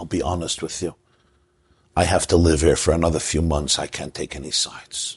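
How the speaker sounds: very quiet, low, hushed, soft, soothing voice. In a joke, voicing a brother-in-law asked to take sides, quiet soothing voice. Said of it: "in a very quiet, soothing voice".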